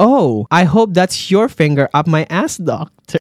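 ordinary talk, nothing marked

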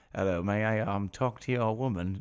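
soft, quaint put-on olde English voice. Retelling the voice he started doing, old English voice. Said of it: "doing this voice of like an English, like old English".

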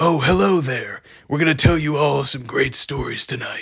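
put-on puppet character voice. Describing the Christmas special's puppet framing segments: Maurice voice. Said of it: "that's his voice".

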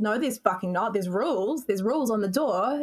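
ordinary talk

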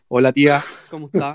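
put-on, forced, very deep low voice. Retelling how someone greeted an aunt as they had rehearsed: put-on deep voice. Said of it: "tenéis que poner voz grave".

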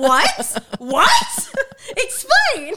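high, loud, baffled, laughing mock reaction. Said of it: "and I'm like".

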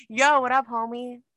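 nervous, high casual tone. Retelling how a nervous wedding guest kept greeting people: imitating Sam, nervous. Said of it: "first he goes".

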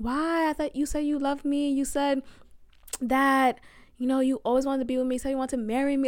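tearful voice, crying through the words. Retelling a breakup phone call, re-enacting own past crying. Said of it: "And I'm crying on the phone".

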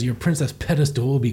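ordinary delivery

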